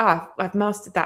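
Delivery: ordinary delivery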